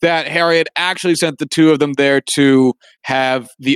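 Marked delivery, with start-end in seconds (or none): none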